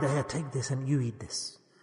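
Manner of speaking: very soft, very quiet, low murmur. Acting out a mother handing food to the child she loves most, quietly. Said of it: "then she will say quietly".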